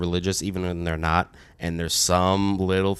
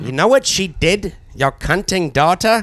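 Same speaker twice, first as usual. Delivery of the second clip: very high, loud, drawn-out put-on British accent; 12 semitones higher, 7 dB louder than usual. Quoting a line from a movie again: British accent. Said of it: "and it is in a British accent".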